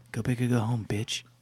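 slow, sneaky half-whisper, very close to the ear. Seraph sneaks up behind someone: Seraph half-whispering in your ear. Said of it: "sneaks up behind you and whispers in your ear".

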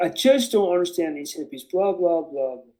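ordinary talk

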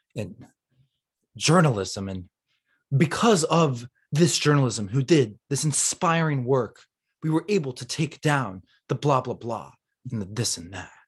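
slow, drawn-out, sing-song dramatic speech. Recreating a journalism professor's lecture when asked: imitating a slow, dramatic professor. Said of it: "talking like this".

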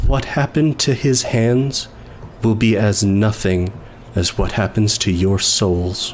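low, quiet, hushed yet booming and echoing. Voicing his character's threat to the crowd, quiet but loud, echoing. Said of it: "it's a quiet statement, but loud, but echoing".

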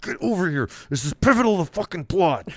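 imitated shouting. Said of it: "loud as I can".

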